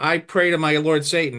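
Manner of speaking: usual speaking voice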